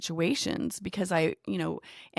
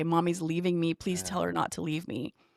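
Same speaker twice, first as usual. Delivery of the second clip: imitated sobbing, pleading tone. Retelling how he pleaded in front of the children: imitating sobbing pleading. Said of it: "He would sob in front of our children and say".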